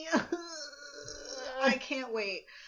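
high, slow laughing fake crying, mock sobbing.

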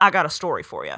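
put-on Texas accent. Acting out a book character's line, Texas drawl. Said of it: "but I think he's like Texas".

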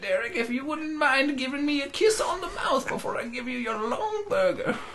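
put-on very high, soft, decrepit old lady voice. Asked to do the voice again, addressing Derek: old lady voice. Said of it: "Hit me with it again".

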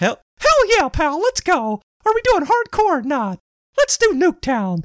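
pitch going way up high, bouncing. Retelling joining a game party of strangers as Mickey Mouse, Mickey Mouse voice. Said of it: "doing call-outs as Mickey".

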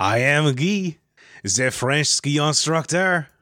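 slow, bad, put-on French accent.

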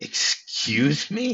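acted, high, startled, really surprised reaction. Retelling a character's reply in a scene: imitating a really surprised reply. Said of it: "really surprised".

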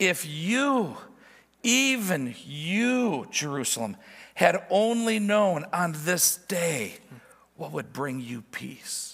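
sorrowful, aching lament with you drawn out. The speaker quotes what he said as he wept over Jerusalem; retelling words with an ache. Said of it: "hear the ache in his voice".

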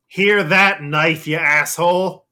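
very loud, high-pitched yell. Voicing a man who leans forward out the door; yelling out the door. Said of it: "looking out the door and sort of like leaning forward".

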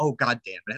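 soft, quiet voice. Repeating another person's aside to a listener, quietly said. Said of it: "did you not hear Tucker quietly say".

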